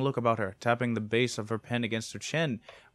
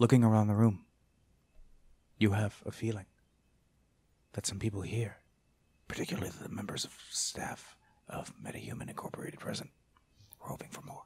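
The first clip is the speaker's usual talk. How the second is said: hushed whisper, much quieter; 2 semitones lower, 4 dB quieter than usual. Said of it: "I don't know why I'm whispering so much".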